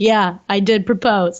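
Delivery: level, unexcited deadpan monotone, no fanfare. Retelling a proposal, quoting the one who proposed: imitating Tino's deadpan tone. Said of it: "he seems honestly just pretty deadpan".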